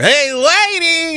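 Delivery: very high voice with lady drawn out. Breaking out a voice as a joke before the show starts: nutty professor voice. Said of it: "I'm gonna break out my nutty professor".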